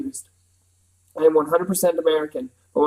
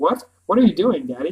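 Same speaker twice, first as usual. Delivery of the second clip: ordinary delivery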